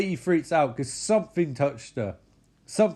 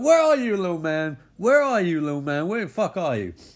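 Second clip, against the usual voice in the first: taunting, threatening tone; 4 semitones higher, 4 dB louder than usual. Retelling a film scene, imitating Micah hunting a little man. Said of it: "And Mike's like".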